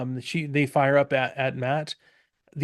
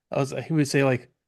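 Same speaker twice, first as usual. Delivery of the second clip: usual speaking voice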